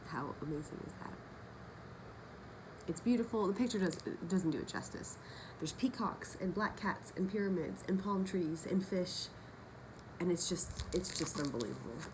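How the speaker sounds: slow, tearful awe, on the verge of crying. Speaker describing something they made before showing it, tearful, close to crying. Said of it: "because I'm going to keep crying".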